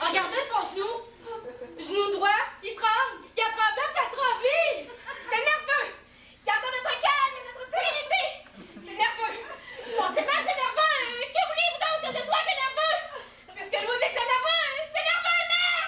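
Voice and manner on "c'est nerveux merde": shouting in exasperation. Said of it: "C'est pas la peine de crier comme ça".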